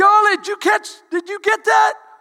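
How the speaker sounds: put-on yelling. Retelling a question yelled to a mother-in-law on a ride: imitating someone yelling. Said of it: "he's yelling at her in the, on the ride".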